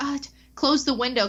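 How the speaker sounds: flustered, panicked blurt, tripping over the words. Telling a story, the speaker acts out the woman at the window: imitating a panicked woman. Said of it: "she panicked".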